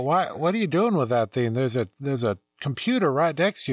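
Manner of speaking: normal talking voice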